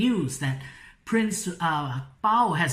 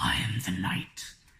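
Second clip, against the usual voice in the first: low, hushed, slow, drawn-out caped-hero voice; 12 semitones lower, 6 dB quieter than usual. Explaining how a name must be read aloud, doing a Batman voice. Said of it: "Batman always has that voice".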